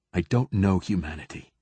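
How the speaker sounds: weary, exhausted, level, flat monotone drone. Narrator reading the consul's reply, in an exhausted monotone. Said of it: "said the consul in an exhausted monotone".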